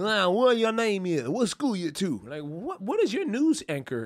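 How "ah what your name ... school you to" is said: put-on Deep South accent throughout. Mocking how people from the deep south talk: imitating a deep south accent. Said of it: "to pronounce things the way".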